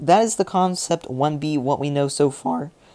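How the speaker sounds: voice cracking. Wrapping up what is known so far about a tank, voice cracking. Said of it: "excuse the voice crack there".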